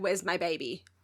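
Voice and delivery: frantic, panicked man's voice. Retelling a scene where a man asks for his baby: imitating a panicking man. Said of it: "panicking 'cause he's like".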